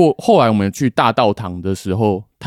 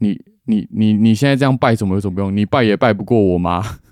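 plain

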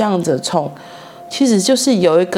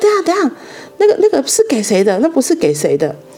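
put-on sudden, abrupt, startling, high-pitched shout; 8 semitones higher than usual. Retelling stopping someone handing out meal boxes at work, retelling a sudden shout. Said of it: "我就突然大叫".

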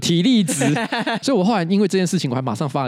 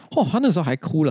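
ordinary talk, nothing marked

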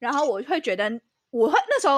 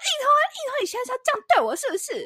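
mock very high, shrill, confrontational yell; 13 semitones higher than usual. Retelling banging on a locked door, the speaker acts out what they yelled: retelling a yell. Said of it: "大吼".

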